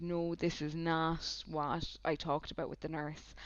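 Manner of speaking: plain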